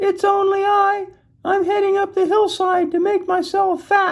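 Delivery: squeaky, very high little goat voice. Reading a story aloud, as the little billy goat answers the troll: squeaky little goat voice. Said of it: "the little billy goat squeaked".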